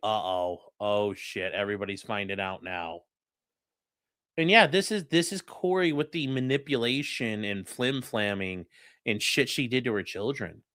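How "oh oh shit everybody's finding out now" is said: sudden, caught-out, inner-thought tone of realizing. Commenting on courtroom footage, voicing Corey's realization: imitating Corey realizing. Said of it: "she's just like".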